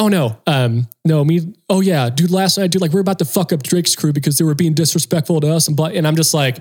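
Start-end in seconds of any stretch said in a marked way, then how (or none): 1.7-5.7 acted, heated, mild half-yell, rattled off. Retelling how a crew worker screamed at them: imitating someone screaming. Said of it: "this guy's screaming to me".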